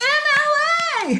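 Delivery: very slow, long-stretched no, drawn out. Clicking through citation styles on a site for y'all, finally spotting one: screaming. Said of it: "I'm sorry for screaming".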